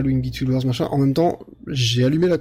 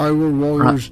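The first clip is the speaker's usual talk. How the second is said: said with English accent; 4 dB louder than usual. Trying to say a game title amid French talk, in a put-on English accent. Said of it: "faut essayer de le dire avec l'accent anglais".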